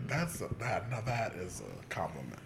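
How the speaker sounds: normal talking voice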